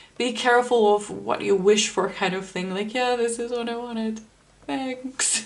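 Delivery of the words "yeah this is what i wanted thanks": mock teary, half-crying, tearful voice. Imagining someone who got what they wished for, imitating someone crying. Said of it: "Just crying".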